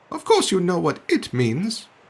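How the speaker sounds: rather cross. Answering the Duck's question, the Mouse replies rather cross. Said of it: "the Mouse replied rather crossly".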